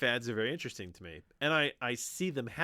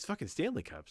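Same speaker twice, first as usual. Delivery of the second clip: put-on irritated, fed-up, exasperated tone; 2 semitones lower, 4 dB quieter than usual. Retelling what a daughter said about a popular cup: imitating daughter's exasperated tone. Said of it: "but this is her tone".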